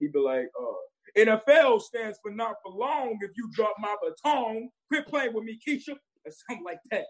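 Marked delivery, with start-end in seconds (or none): 1.2-5.9 voice pitched way up. Performing a serious baton twirling coach who acts like an army sergeant: Coach Gruffy voice. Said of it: "this character called Coach Gruffy".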